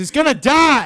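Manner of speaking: very loud, very high-pitched outburst. Retelling how the dad yelled at the mom: imitating someone yelling. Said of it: "he's just yelling at her face".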